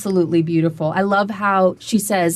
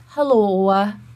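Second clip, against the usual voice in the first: put-on Minnesota accent. Quoting a speaker's accent clip back: imitating Stacy's Minnesota accent. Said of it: "And she does this".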